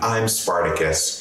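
plain

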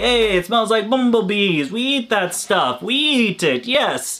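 clumsy fake Italian accent, pitched high. Voicing the bearded dragons in a bad Italian accent. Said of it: "I do bad Italian accents".

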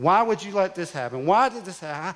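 angry, railing yell. Recounting picking beans on the family farm, retelling yelling at god. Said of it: "I was yelling at God".

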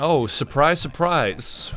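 very quiet, deflated, disappointed let-down mutter. Watching a game with friends as another player keeps winning, disappointed. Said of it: "You sound so disappointed".

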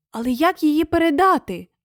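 hushed, soft whisper. The coward speaks after a saw for freeing prisoners is pulled out, whispering. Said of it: "прошепотів страхопут".

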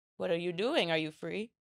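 put-on Russian accent. Retelling what a man would say on seeing the speaker, in a Russian accent. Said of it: "Sounds like you're doing a Russian".

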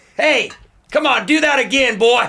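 very high, hollered yell. Acting out a skate park coach yelling at kids: imitating Coach Frank yelling. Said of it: "just yelling at kids".

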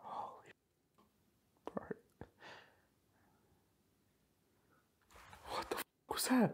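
frightened, whispered outburst. Hearing something strange while a thing keeps flashing, react scared. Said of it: "You a bit scared there".

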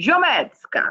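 high put-on Italian accent. Saying her own last name as suggested, in an Italian accent. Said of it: "say them with an Italian accent".

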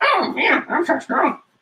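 put-on cat voice, very high-pitched. Someone drawing a weightlifting cat character gives it a cat voice. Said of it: "In a cat voice".

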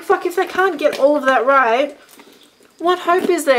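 loud, high, exasperated ranting.

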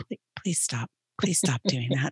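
completely calm, soft, pleading tone. Retelling what a student said on a slide: imitating someone speaking very calmly. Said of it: "Like, so calm".

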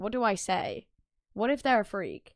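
usual speaking voice

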